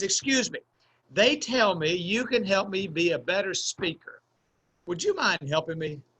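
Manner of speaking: put-on polite, earnest, nice, sincere student voice. Retelling how a student poked his head in asking for help, imitating a nice sincere voice. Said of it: "with a nice voice and a sincere look".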